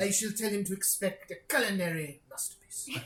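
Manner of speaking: loud put-on French accent. Narrating a tabletop game, voicing the cook in a French accent. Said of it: "inexplicably became French".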